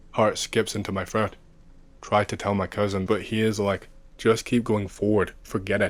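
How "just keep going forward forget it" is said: ordinary talk, nothing marked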